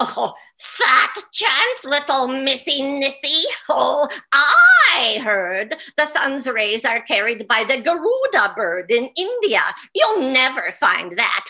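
cackling, slow, drawn-out troll voice. Storyteller voices the troll Huldra answering the travelers, Huldra the troll voice. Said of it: "up jumped another troll. I am [name]".

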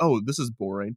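plain

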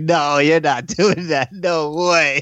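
"no" said slowly with laughter in it. Retelling a friend's reaction with a little laugh in his voice. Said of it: "a little laugh in his voice".

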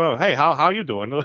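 indistinct, throwaway, passing mumbled words. Retelling a scene, the speaker mimics Jeffrey's greeting: imitating Jeffrey mumbling. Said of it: "Jeffrey's just muttering".

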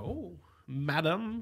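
put-on affected British accent. Recalling what they said as a kid on hearing Britons: put-on British accent. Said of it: "if I heard a British accent, I'd go".

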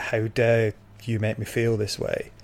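plain

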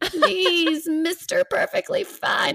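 very high, slow, drawn-out goblin creature voice. Saying a pleading line as a goblin, Lord of the Rings goblin voice. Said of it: "in a goblin voice ... more from like Lord of the Rings".

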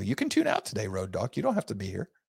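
sarcastic, needling, snarky, swooping tone. Telling a co-host they can tune out today: snarky. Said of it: "I'm in snarky mode".

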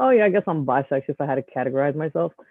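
ordinary talk, nothing marked

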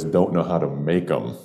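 ordinary talk

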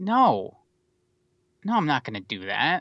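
animated delivery with pitch swooping through the line. Retelling how a director turned down a sequel, imitating Steven Spielberg refusing. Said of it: "doing an impression of how he said it".

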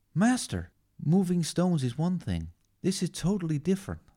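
put-on high-pitched American male voice. Acting out the scene where Yoda trains Luke: Luke Skywalker voice. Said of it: "High-pitched American man".

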